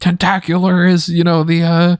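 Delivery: sports commentator voice. Imitating Mauro Ranallo pulling out facts: Mauro Ranallo commentary voice. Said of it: "He'd be like".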